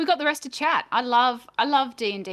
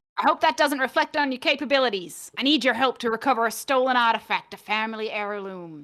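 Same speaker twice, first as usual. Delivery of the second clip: hearty put-on pirate captain accent. Voicing a woman meeting the party in an alley: put-on pirate accent. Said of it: "Apparently she's a pirate now".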